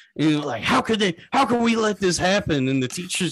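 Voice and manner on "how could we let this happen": mock indignant huffing, put-on anger, higher and slower. Retelling how a girl reacts to a topic in class, imitating pissed-off huffing and puffing. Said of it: "she gets all pissed off and she's like huffing and puffing".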